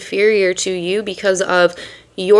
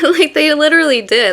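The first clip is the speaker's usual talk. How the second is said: talking through laughter, higher; 7 semitones higher than usual.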